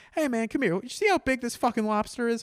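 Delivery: high-pitched put-on voice calling out loudly. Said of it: "He goes".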